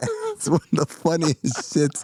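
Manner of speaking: normal talking voice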